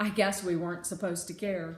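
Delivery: ordinary delivery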